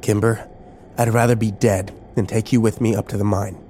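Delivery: ordinary delivery, nothing marked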